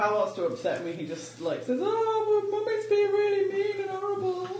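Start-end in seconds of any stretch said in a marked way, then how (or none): 1.8-4.5 very high-pitched pet dog voice. Speaker retells how someone voices the dog to upset her, in Ruby's voice. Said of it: "He says it in her voice though".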